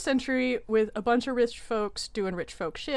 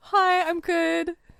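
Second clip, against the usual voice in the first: voice unexpectedly jumping up, high and loud; 7 semitones higher, 6 dB louder than usual. A podcast guest greets the host after being introduced, voice getting really high. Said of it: "My voice got really high right there".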